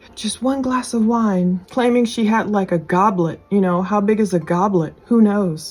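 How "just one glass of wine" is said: mimicked, put-on whisper. Retelling what the rear-seat passenger claimed, imitating Holly whispering. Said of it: "she starts kind of whispering like".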